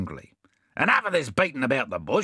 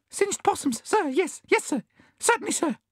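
very high, violently trembling gasps. The bandicoot answers Bill, gasping and trembling violently. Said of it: "gasped the bandicoot, trembling violently".

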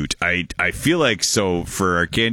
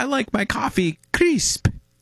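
put-on old lady voice. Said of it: "And the lady says".

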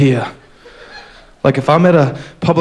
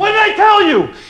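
very high-pitched pretend yell. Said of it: "and then I'd yell at him".

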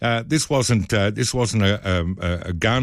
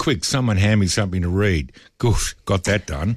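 ordinary talk, nothing marked

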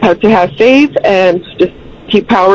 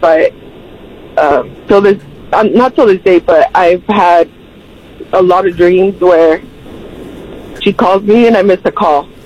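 choked-up voice close to crying, holding it back. Speaker describes dreams of missing her calls, choked up, about to cry. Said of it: "I'm sorry, I'm going to cry".

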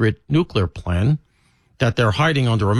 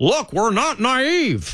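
mock very high, slow, peevish petulant bark; 11 semitones higher than usual. Retelling a speaker's answer to a doubting room: imitating a petulant bark. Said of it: "That's how he did it. That, that sort of petulantly".

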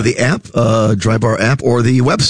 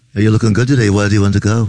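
put-on Liverpool accent; 2 semitones lower than usual. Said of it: "so I just did a Beatle accent".

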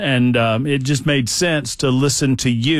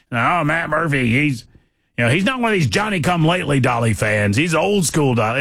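gruff, friendly buddy voice; 3 semitones higher than usual. Retelling how a friend praised him: imitating Dale's gruff voice. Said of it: "Dale Jackson's got this gruff voice".

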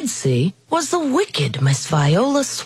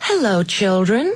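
sweet, sugary tone. After the kids of room 207 whisper, she greets them in a sweet voice. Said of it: "someone said in a sweet voice".

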